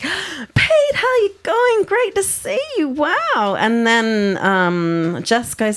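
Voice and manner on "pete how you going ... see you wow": mock, very high, thrilled and excited gushing. Retelling a woman greeting pete through the car window: imitating someone excited. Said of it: "the lady got all excited".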